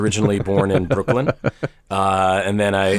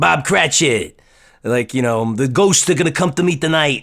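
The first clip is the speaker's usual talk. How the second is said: put-on pitched-up New York accent; 6 semitones higher than usual. Retelling playing Scrooge in third grade: imitating dad's New York accent. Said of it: "with my dad's accent".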